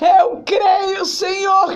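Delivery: desperate, tearful voice.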